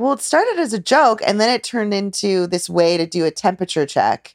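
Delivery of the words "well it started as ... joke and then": usual speaking voice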